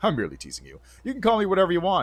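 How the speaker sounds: ordinary delivery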